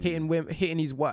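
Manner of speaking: plain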